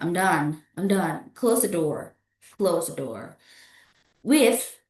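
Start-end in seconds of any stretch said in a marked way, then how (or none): 0.0-3.4 low voice, falling tune on "done" and "door".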